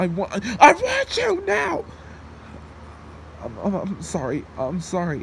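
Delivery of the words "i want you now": yelling, much higher and slower. Begging the only person who talks to them, then suddenly yelling. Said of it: "I didn't mean to yell at you".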